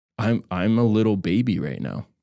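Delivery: plain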